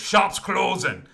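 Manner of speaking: big booming voice. Narrating the end of a phone call, the speaker voices the other end, booming voice. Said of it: "you just hear this booming voice go".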